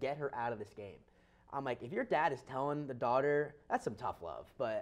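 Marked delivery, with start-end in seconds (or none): none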